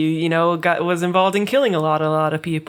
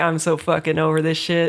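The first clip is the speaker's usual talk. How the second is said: put-on bored, fed-up voice. Describing how dramatic scenes get played: imitating Weiss's over-it attitude. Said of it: "she's like".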